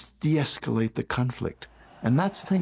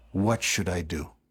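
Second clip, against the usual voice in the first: put-on tired, worn-out, low weary voice; 6 semitones lower, 3 dB quieter than usual. Recounting what the president asked after shouting for half an hour, retelling a weary question. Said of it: "he said to me in a weary tone of voice".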